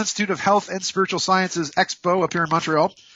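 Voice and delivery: ordinary talk, nothing marked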